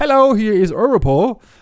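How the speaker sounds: put-on light Indian accent, careful delivery. Retelling a scam call, imitating the woman caller: slight Indian accent. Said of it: "mit leicht indischem Akzent zu sagen".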